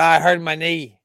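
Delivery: bad, half-hearted, failed Boston accent attempt. Repeat what a man said after hurting his knee, in a bad Boston accent. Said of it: "I can't do a good Boston accent".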